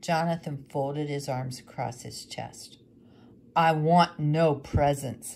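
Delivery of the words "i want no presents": harsh, hard-edged, very loud and slow voice. Jonathan answers the widow handing him presents, harshly. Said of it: "he said harshly".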